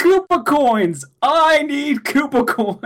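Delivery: mock very high, very slow, shrill, drawn-out scream. Recounting a woman who pulled out a flamethrower, retelling a scream. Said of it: "starts screaming".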